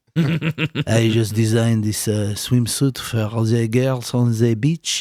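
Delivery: put-on French man voice. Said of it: "That's my French guy impression".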